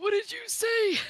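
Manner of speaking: put-on high, loud grandpa voice. Asked to show the weird voices, doing the old grandpa voice. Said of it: "the grandpa voice".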